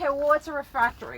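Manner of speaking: ordinary delivery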